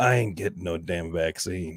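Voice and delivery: very low, breathy half-whisper with faint accent. Showing a joke half-whispered into a friend's ear during a hug, breathy voice, slight accent. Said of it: "a breathy voice and a little bit of an accent".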